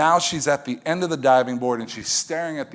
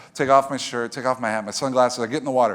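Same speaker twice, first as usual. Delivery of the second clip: plain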